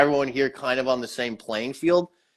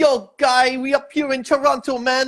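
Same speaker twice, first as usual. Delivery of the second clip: slow, very high fake Caribbean accent; 12 semitones higher than usual. Imitating people from Toronto in a put-on Caribbean mixed with Quebec accent. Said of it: "a Caribbean mixed with like a fucking Quebec accent".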